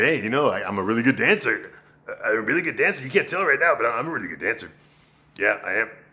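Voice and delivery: mock goofy, playful, joking delivery. Retelling how a soldier proposes to a nurse: imitating a joking proposal. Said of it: "he makes it funny".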